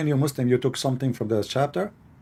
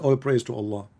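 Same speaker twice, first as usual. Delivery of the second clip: usual speaking voice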